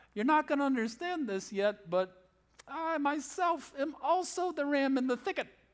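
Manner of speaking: high, sarcastic grand divine voice. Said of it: "shows up a little bit sarcastically, theologically going".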